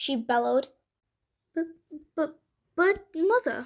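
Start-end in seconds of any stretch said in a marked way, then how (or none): 2.2-3.7 stammering, higher pitch. Narrator reads Jack answering his mother in a fairy tale, stammering. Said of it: "stammered Jack".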